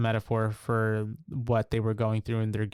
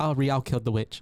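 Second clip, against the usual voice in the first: ordinary talk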